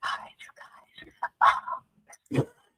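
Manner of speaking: soft, hushed whisper, kept down. Mocking someone who films from a small room: imitating someone whispering. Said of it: "that's why I be whispering".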